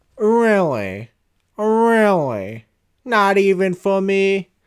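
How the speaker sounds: very slow put-on voice, every word drawn out. Retelling what an annoyed customer said about pricing lamps: Steve Urkel voice. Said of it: "giving a Steve Urkel voice".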